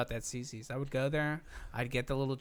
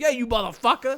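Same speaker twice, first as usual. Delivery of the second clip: very loud, high, dopey put-on New York accent; 10 semitones higher, 12 dB louder than usual. Quoting pissed-off New York people: put-on New York accent. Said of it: "Isn't that my hilarious, stupid New York accent?".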